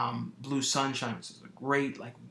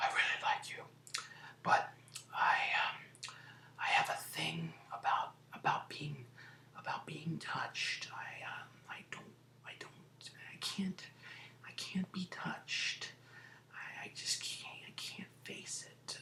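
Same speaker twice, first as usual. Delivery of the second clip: quiet, slow, soft whispered murmur, drawn out throughout; 4 semitones higher, 8 dB quieter than usual. Retelling how a film character talks to the lawyer: quiet put-on whispering voice. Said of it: "this whispering voice the whole time going".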